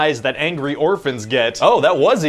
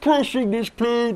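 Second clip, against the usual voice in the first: high, muffled puppet voice, as if behind wall; 7 semitones higher, 4 dB quieter than usual. Describing Bane to someone, doing a Bane voice like a stuck Muppet. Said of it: "you sound like a Muppet that got stuck in a wall".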